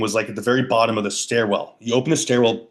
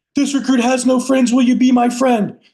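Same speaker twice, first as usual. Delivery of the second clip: put-on, very high, shrill, lung-bursting screaming; 13 semitones higher, 5 dB louder than usual. Retelling a recruit forced to shout by a drill instructor, retelling a recruit screaming. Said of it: "So this guy's screaming".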